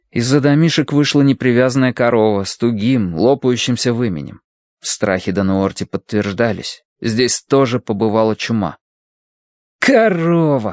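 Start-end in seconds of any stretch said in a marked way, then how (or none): 9.7-10.7 annoyed, vexed, pitched-up, tossed-off word. In a story, Colin sees a cow come out from the huts, annoyed. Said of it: "с досадой бросил Колин".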